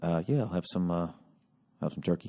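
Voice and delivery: toned-down, flat, deflated voice, energy drained. Retelling ordering turkey right after a curt reply, mock-deflated tone. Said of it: "immediately got to adjust all the way down".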